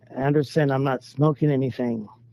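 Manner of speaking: ordinary talk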